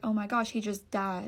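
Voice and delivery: mock crying, tearful voice. Retelling finding the dog gone limp under the bed: imitating own past crying. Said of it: "And I was crying".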